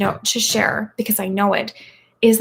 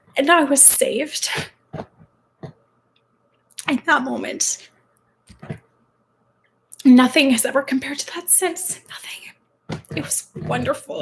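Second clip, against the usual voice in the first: sobbing while speaking, higher pitch; 4 semitones higher than usual. Telling of being saved and forgiven, sobbing while talking. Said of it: "I'm sobbing like a total baby right now".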